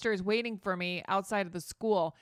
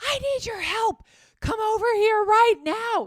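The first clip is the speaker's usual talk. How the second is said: urgent, demanding, very loud, high-pitched yell; 13 semitones higher, 10 dB louder than usual. Retelling a stranger in a van calling out: imitating a man yelling. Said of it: "he was yelling at me".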